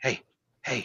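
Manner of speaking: whispering really quietly. Acting out a character who softly calls to a plant to wake it, really quietly. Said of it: "really quietly".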